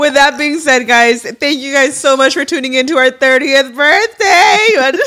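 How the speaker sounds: voice catching, cracking and breaking. Signing off a 30th-birthday video with a co-host, voice cracking. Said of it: "your voice is even cracking".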